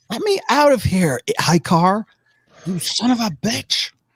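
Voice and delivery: female character voice. Narrating a scene, voicing someone calling from behind a door in a distinctly female voice. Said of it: "it's definitely a distinctly female voice".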